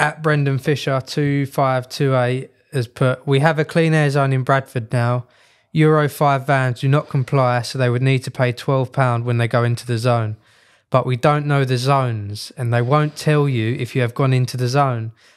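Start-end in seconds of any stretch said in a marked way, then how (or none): none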